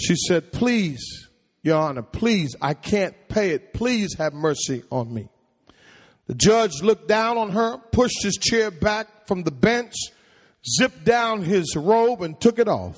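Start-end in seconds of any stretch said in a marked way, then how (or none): 0.5-5.3 acted, teary, small, tearful pleading voice. Retelling a story of a girl pleading with a judge: imitating a tearful small voice. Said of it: "She started tearing up in a small voice".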